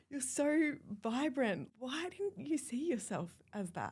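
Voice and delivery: close to tears. Recalling old photos of herself, getting emotional. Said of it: "I'm gonna get emotional saying now".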